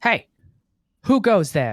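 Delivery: very loud, high, booming distant yell. Narrating a tabletop game, one guard calls out to the group, yelling from a distance. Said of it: "kind of yell from the uh from the distance".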